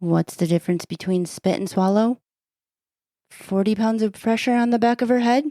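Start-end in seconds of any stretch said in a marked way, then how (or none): 3.3-5.4 pitch rises, ending high on "head". Someone who says they lack a joke-telling voice tries the joke again: rising question intonation. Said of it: "now you're saying it like it's a question".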